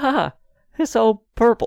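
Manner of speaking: strained, forced, fake-bright cheerful gush, very high. Speaker describes a man being shown a room he hates, mock forced cheerfulness. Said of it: "trying to be as positive as he can".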